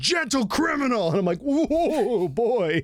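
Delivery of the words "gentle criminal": all-out, high-pitched scream. Recapping a season four scene, the speaker retells a character's scream. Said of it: "He fucking screams".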